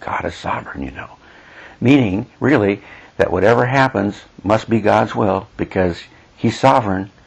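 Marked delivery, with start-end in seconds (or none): 0.0-0.8 put-on whispery tone, much quieter. Imitating how people say a common phrase, in a whispery tone. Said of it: "say it in kind of a whispery tone".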